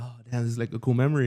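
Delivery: plain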